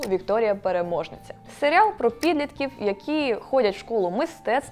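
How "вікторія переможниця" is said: ordinary delivery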